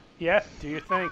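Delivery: normal talking voice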